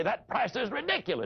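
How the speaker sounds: mock put-out, high, indignant voice. Speaker acting out a prospect objecting to the price, mock-indignant customer objection. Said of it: "stomp his foot in essence and say".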